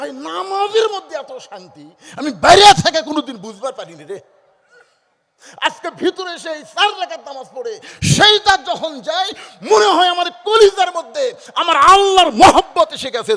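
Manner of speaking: high, loud, overwhelmed joyful outcry.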